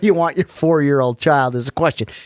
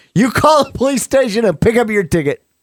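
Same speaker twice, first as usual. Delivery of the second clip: mock yelling, higher pitch; 6 semitones higher than usual. Retelling how the officer told the speaker to get the ticket: imitating an officer yelling. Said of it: "so he yells at you".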